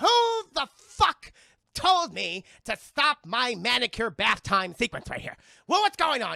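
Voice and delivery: irate cartoon duck voice. Retelling a movie scene, angry Daffy Duck bursting in: Daffy Duck voice. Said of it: "we see Daffy Duck, and he's like".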